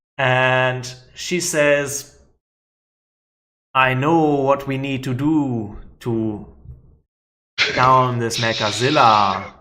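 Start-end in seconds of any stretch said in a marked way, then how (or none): 3.8-9.4 low-ish, deep female owl character voice. Speaker recounts a scene where the owl talks for the first time; deepish owl voice. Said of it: "She's got this sort of deepish voice".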